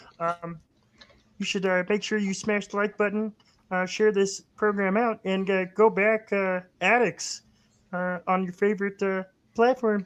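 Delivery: put-on frog puppet voice. As a guest on a comics program, address the audience in a Kermit the Frog voice. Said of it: "Kermit the Frog here".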